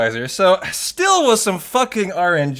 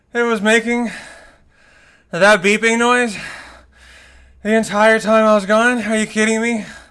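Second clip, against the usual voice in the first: breathless, winded, panting delivery; 4 semitones higher than usual. Speaker reacting to a beeping noise that went on the entire time, out of breath. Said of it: "I'm literally out of breath".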